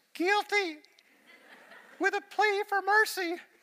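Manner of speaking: very high, shrill, squeaky, far-from-tough, drawn-out pleading. Retelling answering "how do you plead": imitating own un-tough voice, not like John Wayne. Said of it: "I sounded kinda like this".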